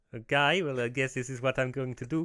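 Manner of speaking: bad fake Swedish accent drifting South African. Asked by the other speaker to try a Swedish accent, doing a bad Swedish accent attempt. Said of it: "you just started to sound like someone from".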